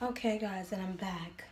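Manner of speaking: low, hushed, seductive sexy voice. Coming back to her viewers after doing her face, in her sexy voice. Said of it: "that was my sexy voice".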